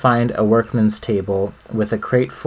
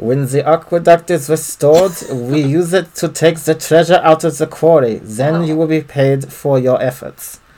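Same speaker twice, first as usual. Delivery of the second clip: put-on German accent, pitched up; 6 semitones higher, 3 dB louder than usual. Voicing a Borgia foreman's lines from a game: German accent. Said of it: "in a German accent, of course".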